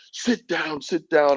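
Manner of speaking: very high, barked, commanding shout. Retelling police shouting at the speaker's group, retelling police shouting. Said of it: "they were shouting at us".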